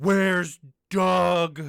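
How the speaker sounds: booming, very loud, furious scream. Voicing her as she turns angry on seeing someone by the fire, angry scream. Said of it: "She screams".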